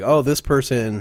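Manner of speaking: ordinary talk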